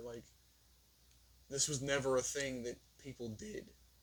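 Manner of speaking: tired voice breaking, cracking and giving out. Speaker getting tired mid-talk, voice giving out, voice cracking. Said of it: "Voice crack".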